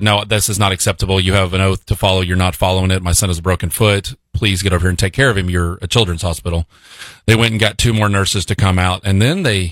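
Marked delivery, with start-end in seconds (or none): none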